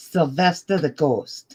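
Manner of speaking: put-on British accent. Asked to do it with the accent, naming the ghost, Sylvester the ghost British accent. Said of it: "do it with the accent".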